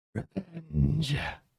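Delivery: strange rasping, high creaky snake creature voice. Voicing a snake that answers the players: weird snake voice. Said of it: "weird voice of".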